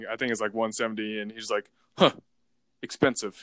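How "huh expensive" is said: imitated Russian accent. Retelling what a man said to him, in a russian accent. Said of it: "it's a Russian accent".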